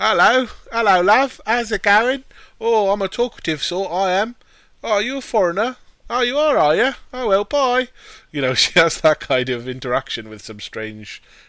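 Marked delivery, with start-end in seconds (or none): 0.0-7.9 very high, loud, chatty put-on British girl voice. Retelling a scene, voicing a little girl met on the rocks: little girl's British accent. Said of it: "she's doing a British accent".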